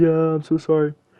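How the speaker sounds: acted blubbering child's voice, tearful and crying. Retelling apologizing to Dad as a child: imitating own crying. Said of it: "I'm, like, crying".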